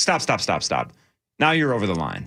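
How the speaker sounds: pissed-off, angry, cutting-off tone. Retelling an interviewer being told off: imitating angry Tom Cruise. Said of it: "Tom got really pissed".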